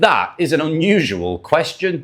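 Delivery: ordinary delivery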